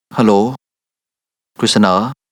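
dejected, listless voice. Answering a phone call, a character speaks in a dejected, listless voice. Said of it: "ทำเสียงห่อเหี่ยวแบบนั้น".

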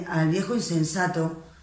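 plain

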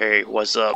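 dropping into a deep grown-up voice. Imagining a grown-up version of the cartoon character Tails saying hi, deep grown-up Tails voice. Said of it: "But a deep voice".

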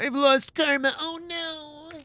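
high, wailing fake boo-hoo sobs.

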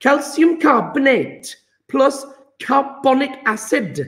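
high-pitched, attempted, put-on Welsh accent. Leading a group through a chemistry example, try the next line in a Welsh accent. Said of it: "Try and do a Welsh accent".

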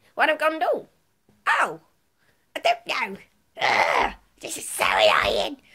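put-on loud, swooping, sing-song cartoon girl voice. Doing a cartoon impression for a listener to guess, Moody Margaret cartoon impression. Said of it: "I'm going to do a cartoon impression".

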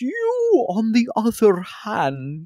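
very high, slow, drawn-out, swooping hag voice. Game master voices a hag turning to a player, hag voice. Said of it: "It's this nasty, nasty looking creature with a hunched posture and swollen, but also kind of bony looking appendages and numerous boils and warts covering her body".

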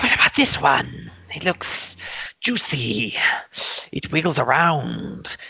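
shrill, rasping, screechy, scratchy tiny voice. Describing the voices Thrum hears, the speaker voices one of them: screechy, scratchy little voice. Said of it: "Kind of these screechy, scratchy little voices".

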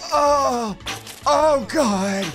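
groaning in pain. Playing a game and reacting to a painful mishap, pained moaning.

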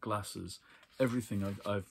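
ordinary delivery, nothing marked

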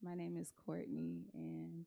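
speaking too quietly. Nervous woman introducing herself to the man greeting her, speaking too quietly. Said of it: "Can you just speak up a little bit?".

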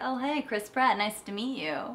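offhand, unimpressed, breezy New York woman's voice. Retelling a video clip, imitating Renee as nonchalant New York lady. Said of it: "this New York lady".

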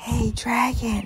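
whispering very softly. A princess speaks to a dragon who is fast asleep, whispering very softly. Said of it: "Elizabeth whispered very softly".

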